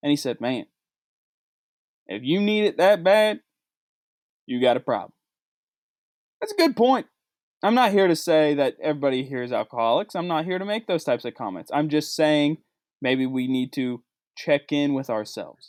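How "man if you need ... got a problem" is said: put-on Texas accent, an attempt. Quoting what a man said about the liquor store line, texas accent. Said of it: "in his best Texas accent".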